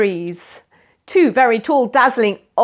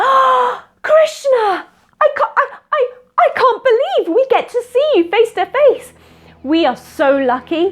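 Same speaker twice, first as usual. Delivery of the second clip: very excited tone. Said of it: "They were so excited".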